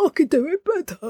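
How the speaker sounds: high-pitched, insistent, know-it-all actor voice. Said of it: "That's a very actory thing".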